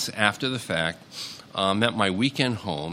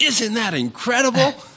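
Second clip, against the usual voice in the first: play-acted excited, very high, loud shout; 5 dB louder than usual. Retelling what he shouted from the deck on a starry night, retelling a shout. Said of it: "And then he shouts".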